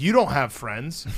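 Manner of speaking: deadpan, dead straight, flat delivery. Father retells his son's reply about his friend Francis, retelling son's deadpan line. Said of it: "he just deadpan was like".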